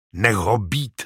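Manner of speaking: sharp, hissed words. Narrating a man pulling a woman back from an injured man, hissed. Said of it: "zasyčel".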